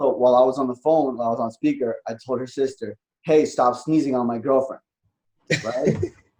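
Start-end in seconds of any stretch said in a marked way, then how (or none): 3.2-4.8 put-on loud masculine voice, faster. Retelling what he told her sister over speakerphone, in a loud masculine voice. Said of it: "with like a loud masculine voice".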